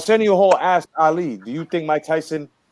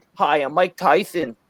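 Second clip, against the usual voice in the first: deliberate, slow, measured, careful, unhurried delivery. Retelling the first time hearing a boxer talk: Mike Tyson impression. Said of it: "the first time I heard him talk".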